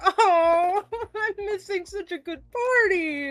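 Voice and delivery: high groaning, drawn-out oh. Voicing a character forced to leave a party: groaning complaint. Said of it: "She groaned so hard".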